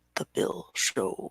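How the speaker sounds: deep, hushed voice. Greeting a guest, the host says the show's name: deeper voice. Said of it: "I have to say it with a deeper voice".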